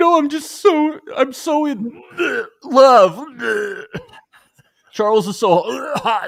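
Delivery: very high, drawn-out, tearful acted sobbing wail. Retelling a reality show moment where a participant starts crying: imitating someone crying. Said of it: "And she starts crying".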